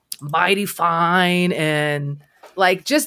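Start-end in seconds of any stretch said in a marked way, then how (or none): 0.2-1.5 twangy Midwestern voice. Imitating a YouTuber the speaker watched: Ben Dean impression. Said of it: "he says shit like".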